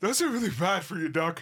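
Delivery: out of breath, high, heavy panting gasps. Player voicing a running wolf speaking to Doc: panting heavily. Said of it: "I'm panting heavily".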